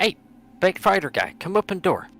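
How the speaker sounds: very loud, very high-pitched shout. A player's character calls out to a fellow adventurer: yelling for someone. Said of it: "Sheppy's gonna yell for Frey".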